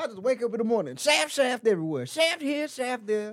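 voice pushed up very high. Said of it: "Sounds like [name]".

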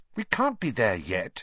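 plain reading voice

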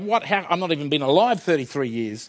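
plain

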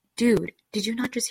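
acted-out whisper. Retelling whispering in a friend's ear at a mirror, retold whisper. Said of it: "whisper in her ear".

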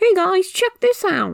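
very high, old cartoon-guy character voice. Asked which voice it is, the speaker imitates a character's old voice. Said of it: "This is the old voice".

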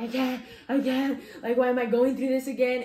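crying out, frustrated, tearful and despairing. Retelling looking up at the ceiling in tears: retelling own crying words. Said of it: "I was still crying and I was like".

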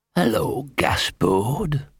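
deep, hoarse, gritty, rasping stage whisper. Reading a story aloud, a dog in an alley greets Gaspode: deep hoarse whisper. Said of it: "a deep, hoarse voice, a kind of whisper with sand in it".

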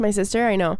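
ordinary talk

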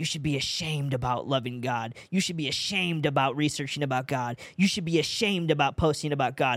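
sinister, hellish, demonic evil voice, repeating. Speaker recounting voices heard while watching a video, imitating demonic evil voices. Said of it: "It literally sounded like this".

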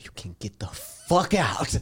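very slow, drawn-out whisper. Quoting a line from a movie in a whisper voice: imitating Steve Jobs whispering. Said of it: "he had a whisper voice".

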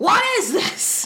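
very high, shrill, loud, flipped-out yell. Retelling the Rev finding pills in the drawer: imitating the Rev yelling. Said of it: "You don't need to yell".

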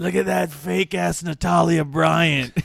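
put-on rough, high, creaky drunk voice. Retelling what a drunk guy said as a girl walked by, imitating Gio's drunk voice. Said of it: "was so drunk that he's like, you know, with his fucking voice".

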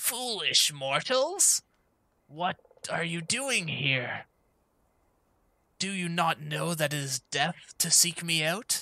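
disembodied echoing voice that seems to surround the room. Narrating a game scene, the speaker voices a figure confronting the players, a voice from all around. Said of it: "almost as if it's coming from all around you".

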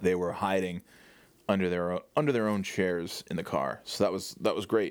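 ordinary talk

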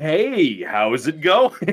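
dumb goofy put-on voice. Retelling how they answer a call from a district manager, in a dumb voice. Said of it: "slowly phase out the dumb voice".

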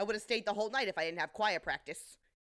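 put-on terse, fast, regimented Brooklyn accent. Recapping a scene, quoting her reply to Munch in a terse, regimented Brooklyn accent. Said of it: "speaking very terse and regimented, but with a Brooklyn accent".

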